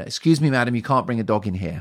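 loud, hostile, aggressive rebuking tone. Retelling how a shop employee turned a customer's dog away: imitating someone speaking aggressively. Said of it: "very aggressively".

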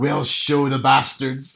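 Northern Irish accent impression. Speaker retells Northern Irish protesters at a pride march: put-on Northern Irish accent. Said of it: "I'm impressed with your accent".

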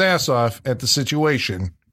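ordinary delivery

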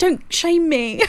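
high, sobbing, crying voice. Imitating a dad who is told to quit smoking: imitating someone crying. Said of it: "He's crying".

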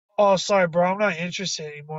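plain

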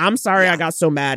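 ordinary delivery

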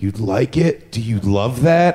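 sultry, seductive come-on tone. Retelling an encounter, the speaker quotes a woman, imitating a sultry voice. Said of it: "in like a sultry voice".

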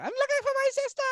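London accent impression. Quoting a woman met while dancing, imitating her authentic London accent. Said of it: "authentic London accent".

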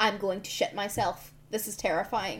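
normal talking voice

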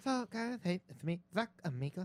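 slow, adorable-sounding little character voice. Asked to do it again, imitating a friend: imitating Zach Amico. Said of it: "Do it again".

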